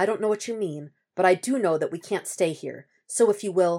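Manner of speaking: ordinary delivery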